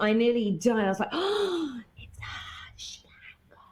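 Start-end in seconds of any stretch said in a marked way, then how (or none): 1.1-3.7 put-on whisper, higher and quieter. Retelling seeing a famous actor in a cafe: retelling own whisper. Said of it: "You were sort of whispering it".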